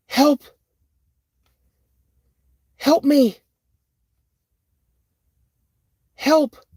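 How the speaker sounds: very high, loud, shrill woman's cry. Telling of a thing he expected to howl like a wolf: imitating a woman's cry for help. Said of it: "what he hears is a woman's voice".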